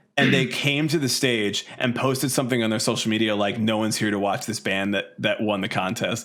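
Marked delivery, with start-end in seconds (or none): none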